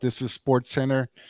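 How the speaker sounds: ordinary talk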